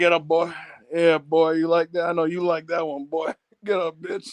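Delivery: put-on southern Texas drawl. Retelling what a man said while whipping someone, in that random Texas drawl. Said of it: "that random Texas drawl".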